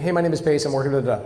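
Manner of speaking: very fast, rapid-fire, rattled-off delivery. Showing how he opens a call on purpose, rushed out very fast. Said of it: "when I go really fast in the beginning".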